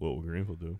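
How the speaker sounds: sexy, seductive tone. Announcing the segment title: said kind of sexually. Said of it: "I said that kinda sexually".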